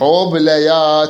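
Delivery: "حبليات" drawn out.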